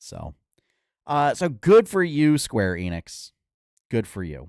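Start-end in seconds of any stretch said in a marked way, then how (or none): 1.3-4.5 loud, sarcasm laid on thick. Praising a company's layoff plans, thick sarcasm. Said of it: "I was trying to lay the sarcasm on that pretty thick".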